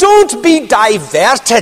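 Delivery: put-on slow, broad Scottish accent. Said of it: "in his big Scottish accent".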